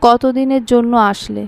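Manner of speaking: plain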